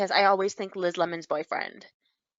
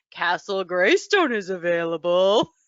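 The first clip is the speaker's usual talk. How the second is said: put-on little girl voice in a deep register; 3 dB louder than usual. Retelling an ad where the little girl is answered, little girl in deep voice. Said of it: "a little girl saying it in a deep voice".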